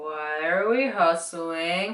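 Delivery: very slow, drawn-out, totally serious deadpan voice. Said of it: "he just kinda goes".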